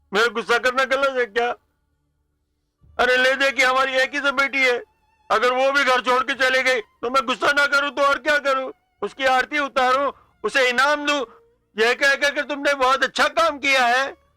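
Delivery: tearful, crying speech. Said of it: "रो क्यों रहे हैं?".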